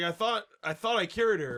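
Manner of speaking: ordinary talk, nothing marked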